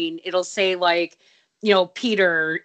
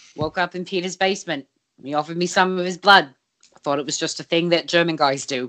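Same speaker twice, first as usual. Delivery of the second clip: put-on matter-of-fact, level, flat monotone deadpan delivery. Quoting how Nick delivers his story, Nick's deadpan monotone. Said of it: "Nick is just so like deadpan and monotone".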